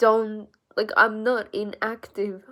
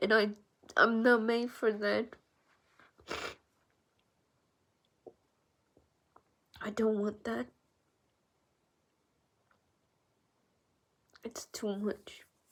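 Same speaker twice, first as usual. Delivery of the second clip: tearful voice, quieter; 8 dB quieter than usual. Ending a recording after nearly thirty minutes, crying while talking. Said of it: "I didn't mean to cry like a bitch".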